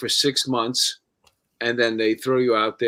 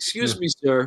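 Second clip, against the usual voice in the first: put-on, overly polite voice; 3 semitones higher than usual. Acting out a police officer being all about politeness: put-on overly polite voice. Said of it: "It's all about being polite".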